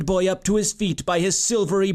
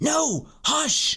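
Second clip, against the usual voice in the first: harsh, hushing whisper, pitched up; 8 semitones higher than usual. Reading a story: a character hushes his companion on hearing someone nearby, in a harsh whisper. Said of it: "Joshua said again in a harsh whisper".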